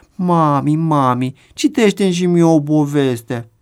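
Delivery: slow, drawn-out, whiny put-on child whimper. Acting out a little girl begging her mother for a story, imitating a child whimpering. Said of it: "Scâncește ea".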